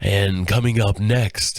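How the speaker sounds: generic radio announcer voice, projected from the diaphragm. Showing how a cold makes the voice sound: generic radio announcer voice. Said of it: "my voice has this generic radio compression".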